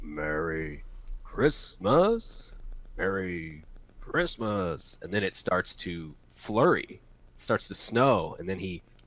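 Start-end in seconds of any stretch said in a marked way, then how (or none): 0.0-5.0 slow, stretched-out delivery. Reenacting a movie scene on request: Harry practicing a Santa voice. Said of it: "Can somebody, uh, reenact that for me?".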